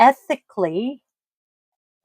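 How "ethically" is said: ethically stressed, louder, with rising pitch at end. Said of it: "emphasis on the word ethically".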